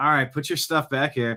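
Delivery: put-on exasperated sigh. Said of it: "he's kind of annoyed that he has to do it".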